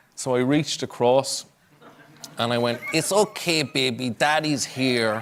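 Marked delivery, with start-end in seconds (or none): 2.9-5.2 slow, silly, funny put-on hand-puppet voice. A father comforting his crying child through his hand, in a funny hand-puppet voice. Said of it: "I like talk with a funny voice".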